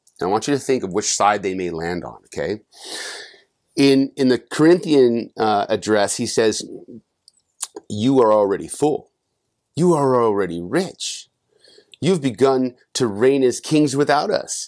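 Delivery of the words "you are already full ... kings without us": mock snarky tone, higher pitched. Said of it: "He's, he's snarky there".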